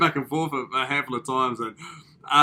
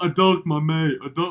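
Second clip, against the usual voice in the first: mock crying voice. Retelling how a guy on the show cried after a rose mix-up: imitating someone crying. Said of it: "and then he started crying".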